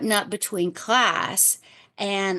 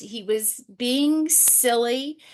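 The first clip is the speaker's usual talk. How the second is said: ordinary delivery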